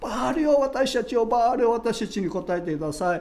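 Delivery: frenzied, high, frantic shouting.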